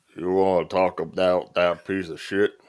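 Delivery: thick, heavy country-sounding voice. Quoting an actor's podcast remarks about a movie: Sam Elliott voice. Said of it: "my best, uh, Sam Elliott voice".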